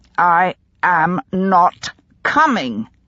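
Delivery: very slow and deliberate, word by word. Charlotte answers Carolyn's offer that there is always a place for her: very slow and deliberate. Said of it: "very slowly and deliberately".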